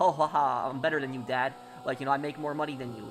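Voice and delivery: ordinary talk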